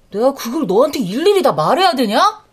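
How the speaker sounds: irritated, annoyed snapping voice. Older sister, questioned by her sibling about shopping bags, snapping back irritated. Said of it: "왜 짜증이야?".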